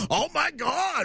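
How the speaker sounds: high, mocking, parroting voice. Retelling how a man on a plane mocked a woman to her face: mocking imitation of her. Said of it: "He mocks her to her face".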